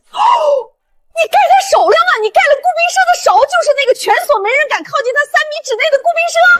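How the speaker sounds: shocked, high-pitched, loud shouted outburst. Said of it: "陈姐，你小声点儿".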